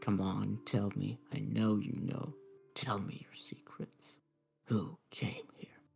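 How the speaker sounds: under-breath mumble. Game master voicing a character with his ear to the ground: muttering under breath. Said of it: "You can hear him mutter under his breath".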